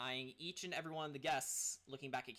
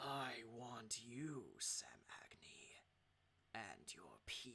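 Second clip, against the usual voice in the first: put-on cold, icy voice sounding centuries old; 3 semitones lower, 8 dB quieter than usual. Narrating a scene, voicing Uli as he addresses Sam Agni: Uli's ancient, cold voice. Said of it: "He sounds ancient and cold".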